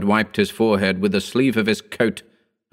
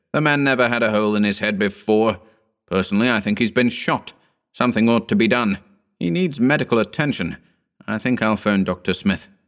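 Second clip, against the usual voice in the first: ordinary delivery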